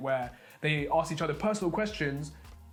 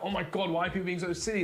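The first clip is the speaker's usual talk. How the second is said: usual speaking voice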